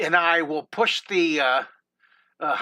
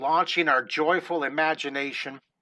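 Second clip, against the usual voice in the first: plain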